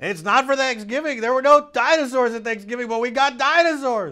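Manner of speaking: very high-pitched, very loud, excited, blaring shout. Retelling what a teacher said at drop-off: imitating a loud teacher. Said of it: "Just like that".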